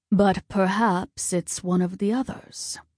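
ordinary delivery

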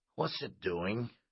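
plain

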